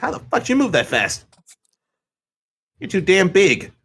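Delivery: very high, squeaky man's voice. Imitating a man who took fifteen minutes to reach him, high-pitched voice. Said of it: "I'm trying to replicate his voice, his voice was like real high pitched".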